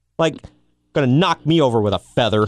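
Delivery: ordinary delivery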